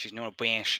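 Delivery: put-on Boston accent. Trying a line after another player asks for it: boston accent. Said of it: "Let me see what I can pull out here".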